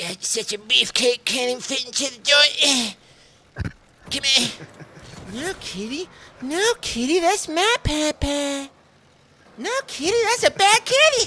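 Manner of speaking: cartoonish voice, high and loud. Doing an impression after announcing it: Cartman voice. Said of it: "I'm gonna do Cartman".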